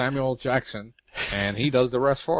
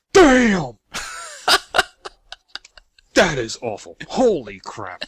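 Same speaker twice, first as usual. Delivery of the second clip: loud, swooping, put-on Brooklyn accent; 5 semitones higher, 8 dB louder than usual. Acting out a tv cook sipping awful soup, put-on brooklyn accent. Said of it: "That was a Paul Brooklyn accent".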